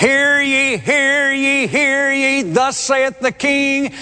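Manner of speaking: high-pitched, royal herald-style calling voice.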